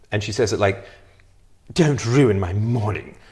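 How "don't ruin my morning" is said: slow, exaggerated British accent, laid on thick. Quoting how a woman delivered a line, in an exaggerated British accent. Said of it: "Too much of a British accent".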